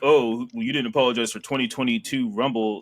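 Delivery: ordinary delivery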